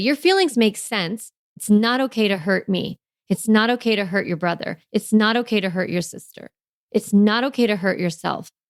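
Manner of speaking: calm, firm, unbending, hard voice. Showing parents how to set a limit with a child: firm voice. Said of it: "putting in that firm, hard no".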